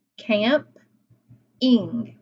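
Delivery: "camping" broken into "camp" and "ing" with a pause. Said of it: "what are those syllables?".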